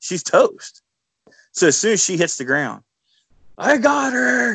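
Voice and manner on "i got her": mock excited, very high shrieking scream. Retelling his own shout after the deer falls: retelling his own scream. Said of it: "And I'm screaming".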